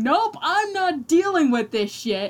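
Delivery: very loud, high and emphatic. A tabletop player's character straightens up and refuses to deal with it, in a very loud voice. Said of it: "in a very loud voice".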